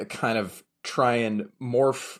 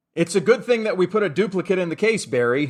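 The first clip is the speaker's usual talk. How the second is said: loud, fast, pointed calling out. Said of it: "kind of loudly say".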